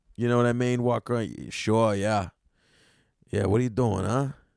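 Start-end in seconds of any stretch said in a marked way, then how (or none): 3.3-4.3 Italian-American accent, Boston attempt sounding Italian. Speaker practicing a boston accent, but it comes out a little italian. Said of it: "that felt a little Italian".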